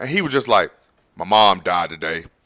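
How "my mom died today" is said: mock deadpan, completely flat with no feeling. Retelling a film character's line about his mother: imitating an emotionless line. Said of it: "It was better acting than what I just gave you".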